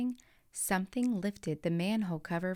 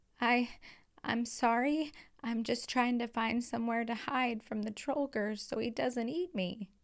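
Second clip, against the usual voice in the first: quavering, trembling, stammering voice; 4 semitones higher than usual. Reading a story, a boy apologizing to an angry goblin: trembling voice. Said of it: "with a trembling voice".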